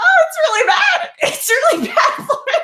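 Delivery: hysterical, very high, loud laughing shout.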